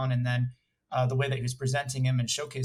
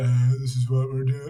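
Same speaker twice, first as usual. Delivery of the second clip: loud, flat, droning one-note monotone; 7 dB louder than usual. Describing bad recorded narration, demonstrating the monotone. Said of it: "Or like the monotone".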